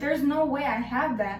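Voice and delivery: ordinary talk, nothing marked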